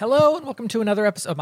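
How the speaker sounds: voice cracking and breaking. Starting the podcast intro again after coughing: voice cracking. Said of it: "My Voice cracked".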